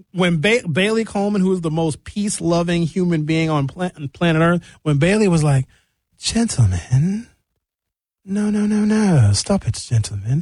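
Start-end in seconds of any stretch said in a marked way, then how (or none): 6.2-10.4 put-on English accent, higher and slower. Retelling how Bailey broke them up, the speaker imitates her English accent. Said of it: "She got an English accent".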